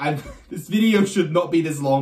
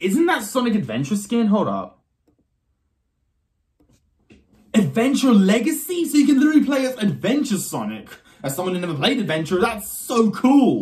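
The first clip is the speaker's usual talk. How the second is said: excited, pitched-up, swooping fanboy gush; 6 semitones higher than usual. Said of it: "I really hope your ears are not bleeding".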